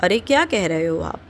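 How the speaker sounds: ordinary talk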